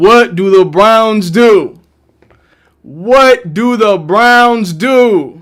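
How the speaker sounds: very slow, excited, hyped-up shouting. Talking through the Browns' pick on draft day, yelling. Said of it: "Because I like yelling".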